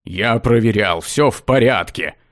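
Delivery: irritated, annoyed, dismissive tone. Narrator reads a man with a crying baby answering his colleague, irritably brushing off. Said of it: "раздраженно отмахнулся Ксандр".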